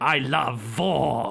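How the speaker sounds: put-on sinister German-accented voice. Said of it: "you know the Nazi German guy from".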